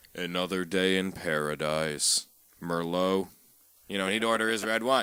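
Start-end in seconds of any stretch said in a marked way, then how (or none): 0.2-3.3 slow, flat, dull, level monotone. Retelling how a regular at the bar ordered his wine, in a flat monotone. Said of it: "just all monotone".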